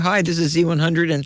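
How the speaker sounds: ordinary delivery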